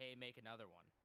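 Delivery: plain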